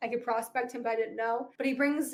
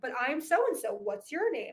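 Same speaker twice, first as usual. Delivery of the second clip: ordinary delivery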